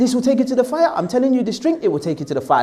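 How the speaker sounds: fast, preachy, lecturing put-on sermon voice. Retelling what he used to tell people when newly religious, mimicking his own preachy lecture tone. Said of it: "I probably was doing it like the talks".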